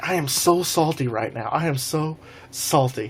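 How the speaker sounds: ordinary delivery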